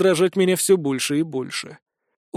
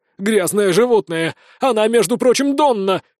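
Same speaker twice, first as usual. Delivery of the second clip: haughty, arrogant exclaiming outcry; 3 semitones higher than usual. The captive elf keeps answering his captor, who threatened his sister: haughty exclamation. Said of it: "высокомерно воскликнул эльф".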